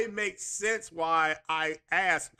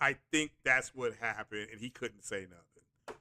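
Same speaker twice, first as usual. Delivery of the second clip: ordinary talk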